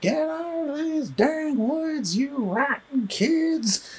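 very high, slow cartoon sheriff voice. Quoting the movie's sheriff character, in a Yosemite Sam voice. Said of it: "he's the live-action counterpart to Yosemite Sam".

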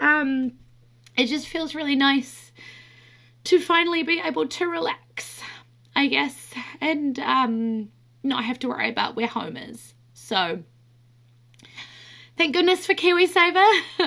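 tearful, high voice, crying through the words. Speaking on the podcast, crying. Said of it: "I'm crying on the podcast".

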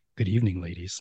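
very deep, low, soft, fake seductive sexy voice. Trying to drop an octave for a joke: put-on low quiet storm voice. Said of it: "I'm trying to drop in an octave".

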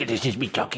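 dopey, annoying, stupid-sounding crow character voice. Doing an impression of how the Crawling Crow would talk: Crawling Crow voice. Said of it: "He was like".

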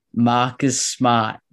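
imitated Boston accent. Naming the NBA steals leader in a Boston accent. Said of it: "I'm going to do my best impression of Boston".

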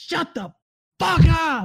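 screaming at full lung power, very high, drawn out. Retelling how a friend smashed the wall and yelled: imitating a yell at the top of his lungs. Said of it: "as loud as he could, top of his lungs".

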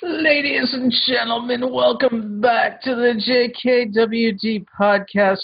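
very high strained voice, as if pushing hard. Host opening the JKWD podcast, in a strained, constipated-sounding voice. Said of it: "I'm not as constipated as I sound".

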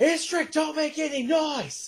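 very high, loud shout. Voicing a character who shouts at a raging fighter: Axray shouting. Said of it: "Axray's voice just go".

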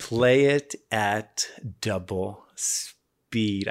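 very slow, deliberate, word-by-word delivery. Speaker tells listeners to play the episode at double speed, said slowly. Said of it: "I said that slowly".

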